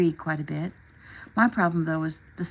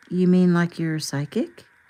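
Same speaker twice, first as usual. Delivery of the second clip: plain reading voice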